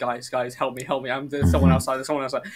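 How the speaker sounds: fast, frantic, terrified pleading. Retelling calling the guys on the computer for help: imitating own terrified plea. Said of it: "I'm terrified".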